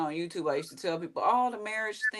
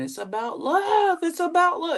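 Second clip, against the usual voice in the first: screaming, very high, pitch climbing; 10 semitones higher, 7 dB louder than usual. Retelling a video of a woman yelling about love: imitating someone screaming. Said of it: "she's just screaming".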